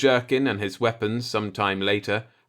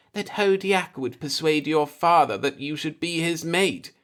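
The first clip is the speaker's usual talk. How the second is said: slight man's voice, high-pitched and feminine-sounding; 6 semitones higher than usual. The seeker answers Mian-Ith in a soft, high-pitched voice. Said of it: "his soft, high-pitched voice more feminine".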